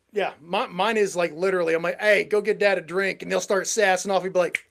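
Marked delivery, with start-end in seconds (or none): none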